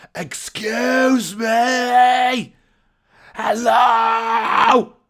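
shrill, very high, loud shout with long drawn-out "me". Retelling being stuck behind a door, shouting through a keyhole: reenacted shouting. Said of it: "And I was shouting".

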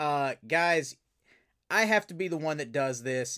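ordinary talk

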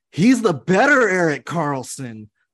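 very loud, high, animated shouting. Telling a story about Eddie Lack, the speaker quotes him chiming in: retelling Eddie Lack's loud call-out. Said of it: "Eddie chimes in loud as hell".

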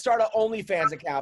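ordinary talk, nothing marked

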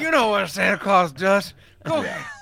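put-on drunken slurring speech. Retelling a scene where Sims eggs on Santa, imitating Sims slurring drunk. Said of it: "Because he's just fucking slurring".

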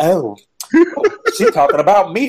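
affected Southern twang, swooping pitch. Retelling a confessional, imitating Portia putting on a Southern accent. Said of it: "she was trying to be all Southern and shit".

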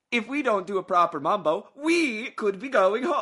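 fake Italian accent, high and loud. Repeating a remembered line to a friend, in a mock Italian accent. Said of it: "How is Gal Gadot Italian now?".

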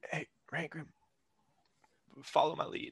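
hushed whisper. Speaking to Rangrim while following behind: whispering. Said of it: "I whisper over to Rangrim".

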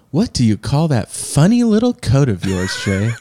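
mocking, patronizing tone with swooping sing-song. Suggesting how to ask him about his coat: as condescending as possible. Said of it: "can you be as condescending as possible? Or like, you could say it like this".

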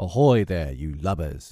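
loud, called-out pirate captain voice. Reading a story: he calls out to the pirates, imitating the voice of Hook. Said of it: "he now imitated the voice of Hook".

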